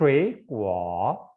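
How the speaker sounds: shui pronounced with rising second tone. Mandarin lesson on the third-tone change in shui guo: rising tone on shui. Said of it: "Nada ketiga yang pertama ini kita bacanya menjadi nada kedua".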